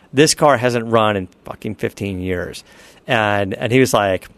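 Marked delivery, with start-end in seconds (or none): none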